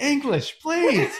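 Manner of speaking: very high, stressed yell. Recounting a stressful moment with cars behind them, the speaker imitates Becky yelling. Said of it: "Becky just yells over".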